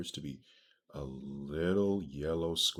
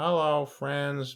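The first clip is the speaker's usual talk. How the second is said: bad, shrill, loud, high-pitched cartoon voice; 12 semitones higher, 9 dB louder than usual. Reading out what it says, doing a SpongeBob voice. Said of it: "I can't do SpongeBob".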